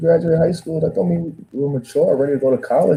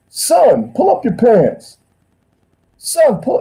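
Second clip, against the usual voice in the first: loud, drawn-out, scolding put-on older southern man scream; 8 semitones higher, 5 dB louder than usual. Retelling how an older man yelled at a teenager: imitating Mister Williams screaming. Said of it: "like screaming at him".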